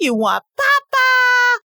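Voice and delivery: put-on very high, swooping, sing-song baby talk. Showing how caregivers talk to their infants: baby talk. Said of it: "And you'll hear people say".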